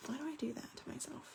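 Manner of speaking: quick, soft, self-scolding whisper.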